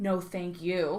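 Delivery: slow, low, emphatic, drawn-out "no". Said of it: "And I'm like".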